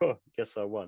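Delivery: ordinary talk, nothing marked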